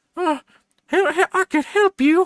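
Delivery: very high, drawn-out, slow, halting, stammered voice. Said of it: "just his voice initially".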